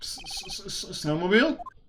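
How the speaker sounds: soft, very slow stammer. Larry, asked by his questioner to say a word, stammering. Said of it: "why are you stammering".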